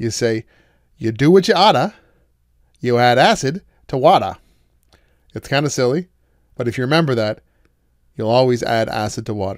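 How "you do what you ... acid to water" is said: loud Boston, Massachusetts accent. Speaker demonstrates how to say a memory phrase, in a Boston accent. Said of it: "you say it with a Boston accent".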